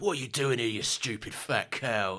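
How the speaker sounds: rude, aggressive, hard and nasty delivery. Quoting a soap character laying into someone: Phil Mitchell impression. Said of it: "Phil Mitchell comes in and goes".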